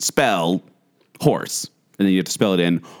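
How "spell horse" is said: very robotic, mechanical talking-toy voice. Recalling a childhood spelling toy's prompts, robotic voice. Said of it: "It was like this really robotic voice".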